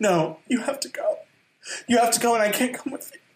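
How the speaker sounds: very high, showy, stagey, over-acted delivery. Mocking breakup monologues, a friend parodies TikTok acting. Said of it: "It's like the TikTok acting".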